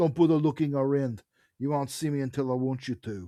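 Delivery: terrible fake put-on South African accent. Performing the caller's line to the detective, in a terrible south african accent. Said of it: "probably a terrible South African accent".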